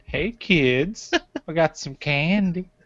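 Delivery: high-pitched, creepy voice. Riffing on a mustached man called Creepy Willie: creepy Mr. Herbert voice. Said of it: "I'm that so creeped it".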